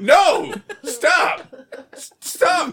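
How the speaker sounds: urgent, agitated, high-pitched delivery. Retelling a car accident, acting out being agitated at the car. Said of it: "I'm like agitated with my car".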